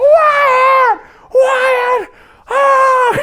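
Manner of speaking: shrill, very high, loud panicked screaming. Retelling screaming for Wyatt after getting hurt on a jet ski, retelling a scream. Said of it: "I'm like screaming like".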